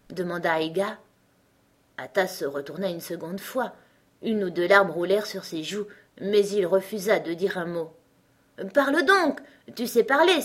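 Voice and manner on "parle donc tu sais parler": high, impatient cry. Someone urges a tearful child who refuses to say a word: impatient exclamation. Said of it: "s'écria Aiga d'un ton impatienté".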